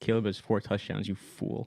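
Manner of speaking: hushed stage whisper, half-whispered. Retelling how a brother leaned over in church: imitating Jeff half-whispering. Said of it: "he whispers".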